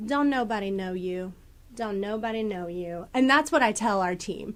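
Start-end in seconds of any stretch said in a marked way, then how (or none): 0.0-3.1 put-on Southern accent. Speaker repeating what she tells her team: put-on Southern voice. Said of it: "I'll put on this Southern voice".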